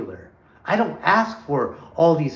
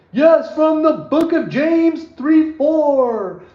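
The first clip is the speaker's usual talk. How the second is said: put-on very high, loud preacher yell, last word stretched; 12 semitones higher, 6 dB louder than usual. Describing people who quote scripture on the street, the speaker is imitating a yelling street preacher. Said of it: "they have to yell".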